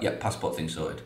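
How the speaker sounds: put-on deadpan delivery. Retelling how he answered a pre-match question, imitating a deadpan answer. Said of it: "he was just deadpan about it".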